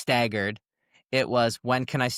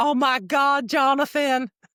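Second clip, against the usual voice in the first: Southern woman's voice, very high-pitched and very slow; 5 dB louder than usual. Retelling a phone call answered by a strange woman: imitating a Southern-accented woman. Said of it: "a strange Southern voice picks up".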